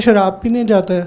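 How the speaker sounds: normal talking voice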